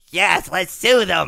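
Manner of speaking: very loud, high, creaky screeching troll voice. Retelling an animation where Lars is drawn as Gollum: Gollum voice. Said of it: "They made him, like, Gollum".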